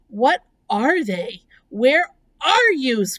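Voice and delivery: loud screaming. Narrator reading a character calling to an unseen voice, screaming. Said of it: "screamed Wilbur".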